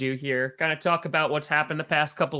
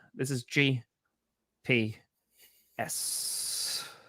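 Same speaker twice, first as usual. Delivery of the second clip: breathy whispered s, breathed out on exhale; 7 dB quieter than usual. Host introducing the Grassi Perna Show: exhaling while speaking. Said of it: "that was an exhale while".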